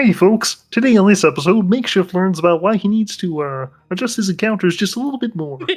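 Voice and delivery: high-pitched, loud, puppet-like voice. Opening an episode intro, the speaker switches to a Kermit the Frog voice. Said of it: "I'm gonna do this in the Kermit voice".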